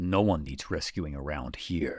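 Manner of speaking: very stern, serious voice, slow pronouncement. Impression of someone with nobody around to rescue: mock-stern voice. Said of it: "he has a very stern".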